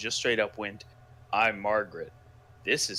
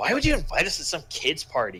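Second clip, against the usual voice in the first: put-on very sassy, mouthy kid voice, loud and swooping; 6 semitones higher, 5 dB louder than usual. Reading a kid character's line from the story aloud: uber sassy kid voice. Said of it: "uber sassy, cunty kid voice in my head".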